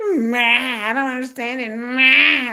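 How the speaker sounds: very slow, ma long and stretched out. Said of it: "My daughter".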